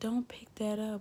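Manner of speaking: sugary-sweet, very slow, drawn way out. Speaker demonstrates talking to someone in the sweetest voice. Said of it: "talking to you in the sweetest voice".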